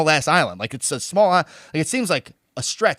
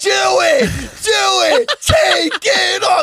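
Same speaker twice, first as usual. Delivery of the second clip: mock drunken woman scream, very high, very slow; 5 dB louder than usual. Retelling an old woman yelling at the speaker, imitating a drunk woman screaming. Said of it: "she's screaming at me like she was wasted".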